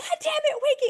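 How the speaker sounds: very high, loud, crying, sobbing yell. Retelling yelling at the dog while crying: retelling a sobbing yell. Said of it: "And I'm crying, right? I am, like, sobbing".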